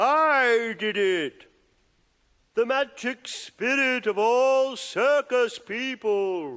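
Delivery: high, thrown puppet voice, "I" drawn out. In a film, a father performs a disappearing trick for onlookers, in a ventriloquist voice. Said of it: "Where did that voice come from?".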